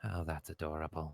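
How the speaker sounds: really quiet, really soft murmur.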